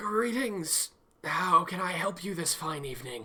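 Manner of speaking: put-on soft, elderly man's voice. Game master voicing an old man who waves and greets the pair: old man's voice. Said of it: "The old man, [name], sees Terry, looks up to Johanna, and gives a very slight, like... It could be interpreted as a bow, but he's just kind of hunching over again and puts a lot more weight on his can".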